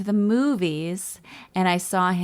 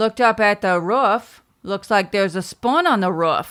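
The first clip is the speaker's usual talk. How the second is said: louder Maine Down East accent; 2 semitones higher, 6 dB louder than usual. Showing what a Down East accent sounds like: Down East accent. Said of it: "My dad had a Down East accent".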